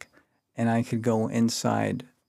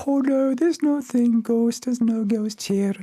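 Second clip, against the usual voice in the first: very high, loud put-on Irish accent; 13 semitones higher, 5 dB louder than usual. Retelling what the sisters answered about a ghost: Irish nun imitation. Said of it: "my best Irish imitation of a nun".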